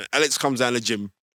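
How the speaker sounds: plain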